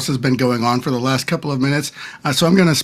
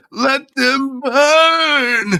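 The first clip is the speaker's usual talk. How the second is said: piercing, very high, drawn-out shriek; 13 semitones higher than usual. Repeating a character's line that the mic cut out: Balthazar screaming. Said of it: "as Balthazar s-, screams that in familiar".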